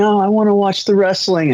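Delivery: very high, put-on sobbing and screaming tantrum wail. Speaker retelling the power going out as a child, imitating crying and screaming. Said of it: "I just kept crying and screaming".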